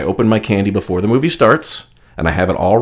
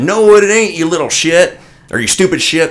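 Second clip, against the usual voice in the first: put-on high, loud, rude older man voice. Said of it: "he said".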